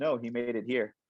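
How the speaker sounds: normal talking voice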